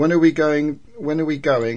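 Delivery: normal talking voice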